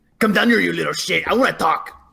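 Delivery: demonic, infernal voice yelling out as if from afar. Calling out to an unseen creature hiding in the rafters: yelling in character. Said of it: "I'm gonna yell out an infernal".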